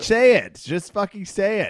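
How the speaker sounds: very high-pitched, shrill yelling. Pushing the other person on the show to say the catchphrase, yelling. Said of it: "Why am I yelling?".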